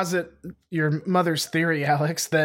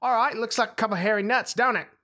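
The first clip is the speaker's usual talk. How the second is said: terrible fake Kiwi accent, pitched up; 6 semitones higher than usual. Joking about opening season 3 with a kiwi fruit, bad New Zealand accent. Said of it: "What accent was that?".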